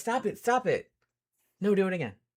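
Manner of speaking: high, put-on pet character voice. Describing the pet getting its ears scratched: voicing the pet's thoughts. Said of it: "And then she'll be like".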